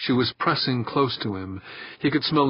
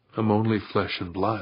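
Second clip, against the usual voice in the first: usual speaking voice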